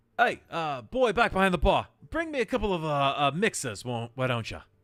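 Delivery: put-on yell. Telling how he yells back to the boy behind the bar, retelling a yell. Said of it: "He yells back".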